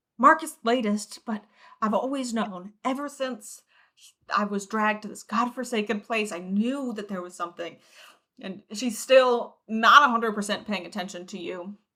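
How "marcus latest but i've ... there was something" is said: frantic, half-attentive muttering to herself. Voicing Angela as she is pulled from her mutterings, frantic muttering. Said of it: "her frantic mutterings".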